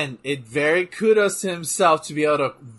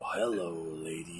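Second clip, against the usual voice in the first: very low, dropped-down wrestler voice; 10 semitones lower, 14 dB quieter than usual. Talking about wrestlers, then doing a Val Venis voice. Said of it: "I wanted to talk like Val Venus".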